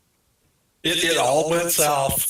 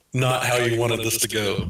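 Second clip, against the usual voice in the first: ordinary talk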